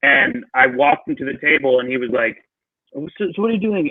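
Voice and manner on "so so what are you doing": amateurish attempt at a British accent. Retelling what a celebrity diner asked at a restaurant table, in an attempted British accent. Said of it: "I don't do British accents".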